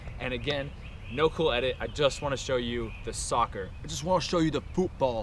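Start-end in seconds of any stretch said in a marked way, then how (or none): 3.8-5.2 fake, quick English accent with raised pitch. Narrating a training video, joking in a put-on English accent. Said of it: "That's my English accent".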